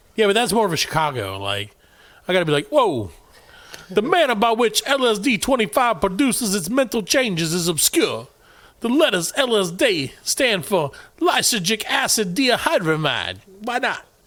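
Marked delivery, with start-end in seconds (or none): 3.9-14.0 slow, put-on New York accent. Trying out a new york accent while reading a passage aloud. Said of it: "Should I do like try to do a New York accent? I'm going to try".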